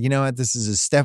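normal talking voice

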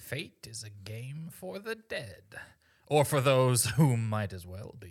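put-on old woman character voice. Narrating a scene and voicing the old lady's line, Morgan Freeman voice. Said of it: "You sound so much like Morgan Freeman with that old lady".

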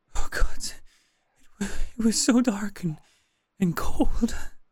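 in a panic. A woman just brought back from death speaks to her rescuer, panicked. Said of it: "in a panic".

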